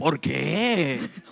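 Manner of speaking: prying, nosy, gossipy busybody voice. Telling listeners to ask their neighbor, the speaker models a gossipy voice. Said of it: "Con voz de chismoso".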